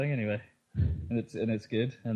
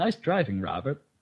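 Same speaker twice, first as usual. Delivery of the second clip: put-on condescending, patronizing American woman's voice and accent; 4 semitones higher than usual. Imitating the game's announcer: patronizing American lady accent. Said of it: "in a sort of patronizing American lady accent".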